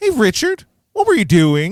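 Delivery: very high, loud, swooping, self-righteous crowing tone. Acting out the hotel scene, imitating self-righteous Tommy. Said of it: "And so he's like".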